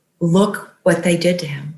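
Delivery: ordinary delivery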